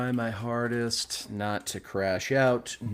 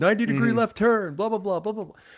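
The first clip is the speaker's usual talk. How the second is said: put-on yelling, higher and louder; 12 semitones higher, 5 dB louder than usual. Describing rally car clips, imitating a yelling rally spotter. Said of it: "the spotter in the passenger seat who's yelling".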